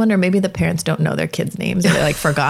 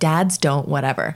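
usual speaking voice

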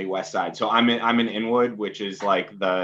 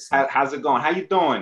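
put-on Bronx New York accent, higher pitch; 5 semitones higher than usual. Asked to do a New York accent from the Bronx, greeting in a Bronx accent. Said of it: "Can you do a New York accent for us from the Bronx?".

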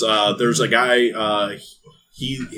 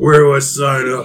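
put-on drunk man voice, louder; 3 semitones higher, 7 dB louder than usual. Voicing a plastered older man signing up: drunk character voice. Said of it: "We got the drunken master here".

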